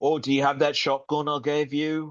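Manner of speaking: put-on Cajun accent. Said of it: "Wilford Brimley with a Cajun accent".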